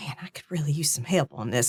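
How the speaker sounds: murmured, barely audible mutter under the breath. Narrating a woman rubbing her ring as she speaks, muttered under her breath. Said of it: "she's barely saying it under her breath".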